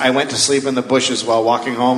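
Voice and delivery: normal talking voice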